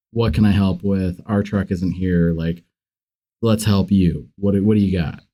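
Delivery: ordinary delivery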